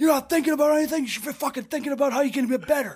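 high-pitched, acted-out screaming rant. Retelling how a man screamed at Dewey while everyone was dying laughing, imitating someone screaming. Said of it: "he just starts screaming at him".

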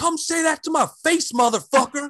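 furious, shrill, very high-pitched yelling. Podcaster retelling women standing up and shouting at men across the room, retelling a yell. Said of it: "so they are yelling".

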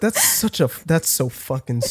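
muttering under one's breath. Acting out a remark during an imagined elevator pitch: muttering under breath. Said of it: "Just under your breath".

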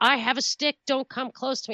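play-acted light yell, high, held back. Retelling what he yelled in the woods when the cops came: imitating someone yelling.

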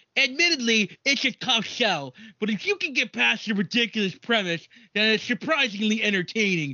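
nerdy put-on voice. Reading a critic's review of Monster Trucks aloud, the speaker uses a nerd voice. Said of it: "The nerd voice".

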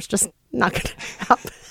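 talking through laughter. Wrapping up a point after a joke, laughing while talking. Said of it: "I'm still laughing about my joke".

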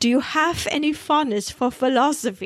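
put-on German professor accent. Retelling how the professor comes in and questions her, in a put-on German accent. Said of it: "in his delightful accent".

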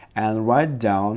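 plain

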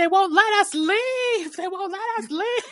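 play-acted screaming, very high pitched, repeated. Speaker retells a character screaming while trying to leave with Ash, retelling a scream. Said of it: "she's just screaming like".

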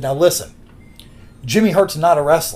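ordinary talk

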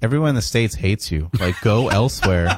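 plain

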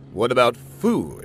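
plain reading voice

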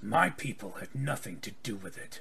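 really gravelly, deep, low voice. Retelling a scene, voicing Armadale as his voice gets really gravelly. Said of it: "armadale's voice gets really gravelly".

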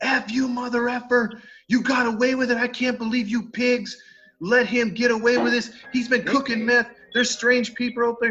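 high, put-on shouting at top of lungs. Retelling a man yelling at the departing sheriff's officers, retelling a shout at full lungs. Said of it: "starts shouting at the top of his lungs".

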